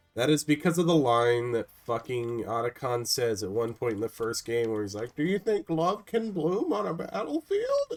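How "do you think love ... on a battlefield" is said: high voice cracking up high. Retelling a character's line from the first game, imitating Otacon's voice cracking. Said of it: "As his voice cracks".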